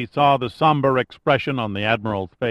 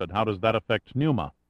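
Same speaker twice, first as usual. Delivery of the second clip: ordinary delivery, nothing marked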